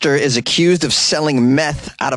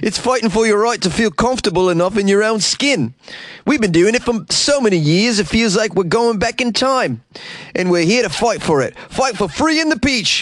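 very bad fake Australian accent, pitched up; 6 semitones higher than usual. Reading out a woman's quote about beachwear, bad Australian accent. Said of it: "This is the worst Australian accent ever".

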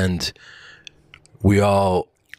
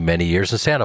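normal talking voice

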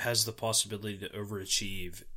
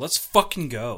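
put-on loud, frustrated, fed-up shout; 8 dB louder than usual. Describing a late goal, voicing the scorer: imitating a frustrated guy. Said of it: "a frustrated guy being like".

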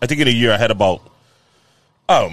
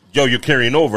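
ordinary talk, nothing marked

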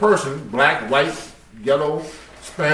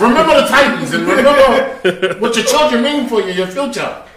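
rousing, stirring, pitched-up motivational tone; 8 semitones higher, 4 dB louder than usual. Imitating a pep talk to a friend about a role: Denzel Washington voice. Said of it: "Denzel gonna give you that pep talk".

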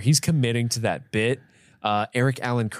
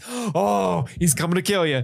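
high gleeful gloating with a long stretched oh; 6 semitones higher than usual. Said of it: "Roger Rees is really going hard on this".

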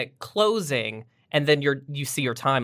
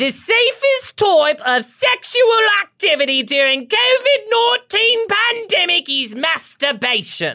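high, loud, exaggerated put-on British accent, laid on thick; 6 dB louder than usual. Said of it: "So here's my British accent".

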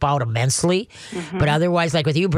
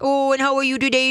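put-on baby talk voice, much higher pitch; 9 semitones higher than usual. Explaining what triggers submissive urination in a pet, demonstrating baby talk voice. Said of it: "if you talk the baby talk".

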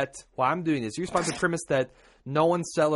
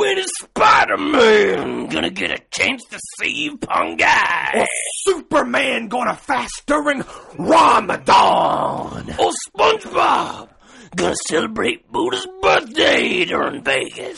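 over-the-top wrestler voice, very loud, rough bellow; 8 semitones higher, 9 dB louder than usual. Taking turns reading a letter line by line, in a Macho Man Randy Savage accent. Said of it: "read in a Macho Man Randy Savage accent".

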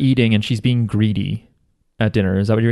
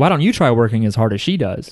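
plain

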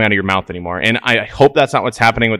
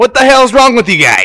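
very high, loud, wild, shrill holler; 12 semitones higher, 8 dB louder than usual. Imitating a coach yelling at players: imitating Verduzco yelling. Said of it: "That crazy Italian guy just yelling".

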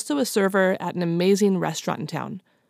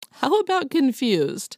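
ordinary delivery

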